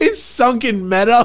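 high, slow, amazed exclamation.

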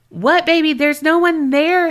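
loud, high-pitched. Retelling what the husband said in bed: imitating someone stating loudly. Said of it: "he stated loudly".

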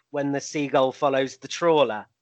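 plain

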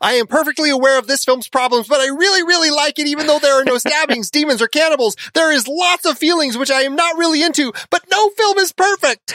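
put-on, shrill, very high, all-out screaming. Reading out a viewer review written in all caps: imitating an all-caps scream. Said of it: "Adelaide is screaming this out at us".

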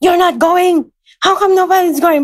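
put-on angry outburst. Retelling how he stormed into the room: imitating an angry raised voice. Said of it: "he just raised his voice and was really mad".

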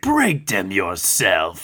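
corny monster voice, low and slow.

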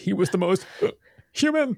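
acted-out, very high, choked-up hammy delivery. Retelling a scene where Kirk gets choked up: imitating Kirk choked up. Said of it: "He gets all choked up".

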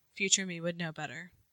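mock hushed, very quiet, flat deadpan. Imagining how the husband in the story answered: imitating a deadpan reply. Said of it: "he's very deadpan".

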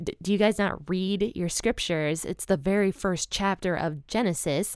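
plain

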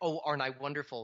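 ordinary delivery

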